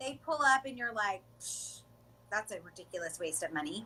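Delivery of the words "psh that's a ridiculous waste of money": sneering, disdainful, dismissive scoff opening with psh. Acting out someone sneering at a fancy car: imitating a scoffing remark. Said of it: "rolled your eyes or said something nasty".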